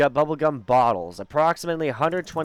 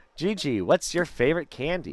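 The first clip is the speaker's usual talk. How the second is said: ordinary talk, nothing marked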